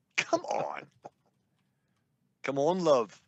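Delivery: clumsy, badly done put-on British accent. Joking with others about the British invasion: bad British accent. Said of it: "brush up on your uh, British accent".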